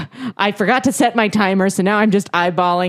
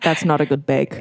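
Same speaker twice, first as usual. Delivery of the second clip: put-on disappointed British voice, lower; 6 semitones lower, 4 dB quieter than usual. Joining in on the bit, acting as the judge: Paul Hollywood impression. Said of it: "do a Paul Hollywood impression".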